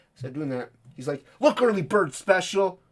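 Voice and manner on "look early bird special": high, very loud hollered yell. Retelling what he yelled at an impatient customer: imitating someone yelling. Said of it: "Yells at her".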